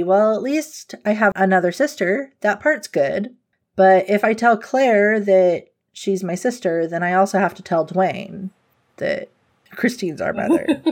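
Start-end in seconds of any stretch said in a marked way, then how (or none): none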